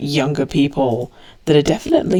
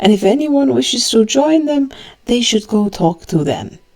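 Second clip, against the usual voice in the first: raised, pitched-up announcer voice; 8 semitones higher than usual. Voicing a character addressing a church crowd from the altar: raised voice announcing. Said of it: "in, like, a raised voice".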